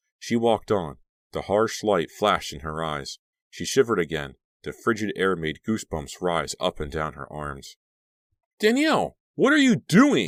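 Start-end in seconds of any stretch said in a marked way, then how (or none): 8.6-10.3 piercing, shrill, very high swooping call. Narrator voicing a character calling out to the heroine: shrill voice. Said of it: "Cliff's shrill voice broke through".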